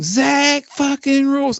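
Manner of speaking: country twang, voice way up high. Arguing about syllable count, say the phrase in a country twang accent. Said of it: "if you say it in a country twang".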